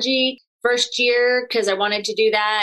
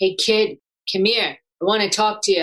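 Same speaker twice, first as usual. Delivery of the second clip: put-on Bronx accent. Imitating a stranger calling out from the shadows, in a bronx accent. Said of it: "he had like this Bronx accent from the East Coast".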